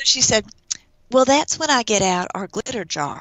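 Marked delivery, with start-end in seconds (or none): 1.1-3.2 Dallas way of speaking. Retelling what one of the counselors said to her, in a Dallas accent. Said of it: "I'm going to do a Dallas accent".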